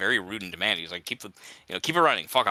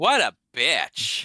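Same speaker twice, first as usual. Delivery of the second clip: put-on, mock Valley Girl voice; 3 semitones higher, 4 dB louder than usual. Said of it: "You sound kind of Valley Girl there at the end".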